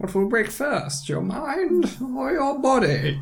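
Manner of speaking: very high, muffled villain voice, as if behind a cup. Trading quoted lines with a plastic cup over the mouth, voice muffled through a cup. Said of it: "you just put a cup on".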